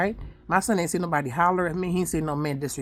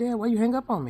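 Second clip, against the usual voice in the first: high, curious, inquisitive acted boy's voice; 5 semitones higher than usual. Retelling a son asking his father a question: imitating son, inquisitive.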